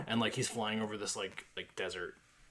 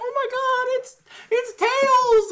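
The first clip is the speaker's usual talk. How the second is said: put-on very high, very loud, drawn-out gushing kid voice; 17 dB louder than usual. Retelling a Sonic movie screening full of kids: imitating excited kids. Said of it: "that was full of kids".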